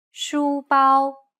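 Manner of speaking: even, steady, level high pitch. Teaching tones, model the syllables for the learner to copy with high, steady pitch. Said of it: "It's pronounced high and steady".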